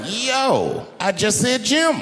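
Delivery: very high, slow, stretched-out "yo". Acting out a scene where Huckleberry Finn meets Jim: acting out Jim's reply. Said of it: "And he's like".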